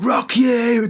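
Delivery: very high-pitched, dead loud shout at full blast. Retelling what a child yelled during a christening: imitating a loud shout. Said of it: "dead loud".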